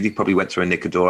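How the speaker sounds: rattled off very fast as an aside.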